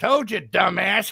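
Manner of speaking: put-on old geezer voice. Retelling a voice heard in the ear warning about a wood stack: imitating an old man. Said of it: "you hear old man".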